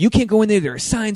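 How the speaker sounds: loud, high-pitched yell. Speaker retells a woman yelling at them before going on stage: retelling a yell. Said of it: "she's just like yelling".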